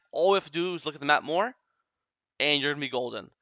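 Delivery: ordinary delivery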